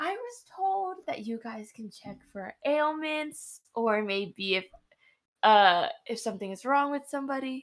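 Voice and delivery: low, hushed, confiding voice kept down. Leaning in to ask, hoping Ginger won't hear: low voice. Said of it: "and I say in a low voice".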